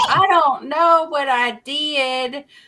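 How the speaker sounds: very high, loud, drawn-out, dim-sounding put-on Southern accent. Retelling how she fooled scammers on calls: stupid Southern accent. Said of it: "I kept doing the stupid Southern accent".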